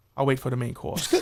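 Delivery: put-on fancy New Jersey accent. Mimicking someone's attempt at a fancy New Jersey guy, in a fancy New Jersey accent. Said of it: "So you try to be a fancy New Jersey guy".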